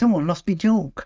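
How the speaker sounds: snide, jeering, sneering tone. Recalling how Tony ad-libbed a line that was not in the script, imitating a snide voice. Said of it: "Tony says in the snide voice".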